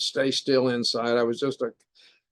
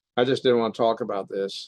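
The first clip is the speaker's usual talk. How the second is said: usual speaking voice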